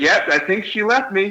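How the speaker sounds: offhand, shrugging plain delivery. Retelling what a hammered man said on coming in: imitating a nonchalant, matter-of-fact voice. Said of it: "nonchalant, matter-of-fact voice".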